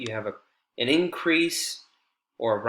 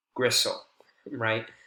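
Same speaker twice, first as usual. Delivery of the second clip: ordinary talk, nothing marked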